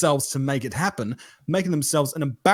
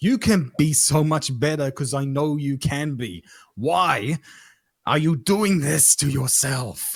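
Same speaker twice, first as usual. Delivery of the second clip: put-on Austrian accent, slower. Speaker voicing a PE teacher's mentality toward them, in a put-on Austrian accent. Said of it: "Austrian P- PE teachers with that accent you just pulled".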